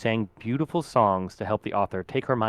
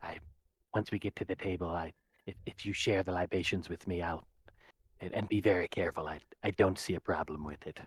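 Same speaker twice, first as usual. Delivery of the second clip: secretive, hushed half-whisper, very quiet; 4 semitones lower, 9 dB quieter than usual. Game narrator voicing a large centaur speaking into a player's ear, half-whispering. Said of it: "The the large centaur whispers into your ear".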